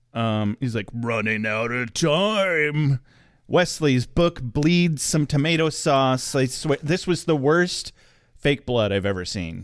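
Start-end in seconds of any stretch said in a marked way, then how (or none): 0.9-3.0 very low, slow, creepy voice with dragged-out timing. Retelling a TV scene, doing Gunn's super low creepy voice. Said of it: "Gunn's voice gets super low and creepy".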